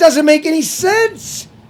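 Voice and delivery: long high-pitched yell. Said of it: "Why are you yelling?".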